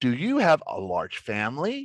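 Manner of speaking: voice rises at the end on family. Demonstrating an example of a closed yes-or-no question; rising intonation at end. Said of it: "your voice goes up at the end".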